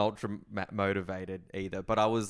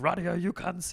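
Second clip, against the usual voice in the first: comic sergeant voice, very high-pitched; 10 semitones higher than usual. Retelling how a sergeant used to talk: imitating a sergeant's funny Bosnian voice. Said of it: "He had this real funny voice".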